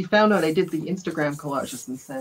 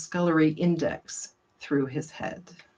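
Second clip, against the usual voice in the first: plain reading voice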